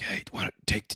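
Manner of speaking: soft, hushed, conspiratorial whisper. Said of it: "are the refs, like, whispering to Dallas Turner".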